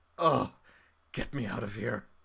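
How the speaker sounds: worn-out, exhausted voice, coughing, sputtering and burbling. Narrating a story and giving the voice its lines: exhausted, sputtering voice. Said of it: "the voice just sounds exhausted uh, and weirdly sort of like coughs and sputters and burbles".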